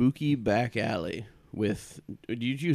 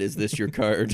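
ordinary delivery

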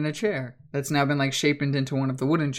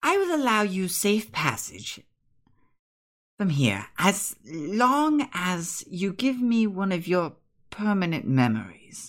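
put-on, higher-pitched, swooping character voice; 5 semitones higher than usual. Voicing a creature that speaks as a player's voice: imitating Becca's voice. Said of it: "you hear it now speak as Becca's voice".

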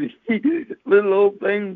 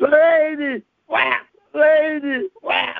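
play-acted very slow, high, drawn-out wailing woman's scream; 6 semitones higher than usual. Telling how a woman hit them with her purse, reenacting their reaction: retelling screaming at a lady. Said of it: "And I'm screaming".

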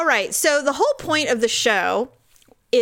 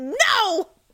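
play-acted high, stinging, fed-up, furious wasp-like voice; 9 semitones higher than usual. Retelling being angry as a teen, imitating own angry yell. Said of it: "I was like an angry wasp".

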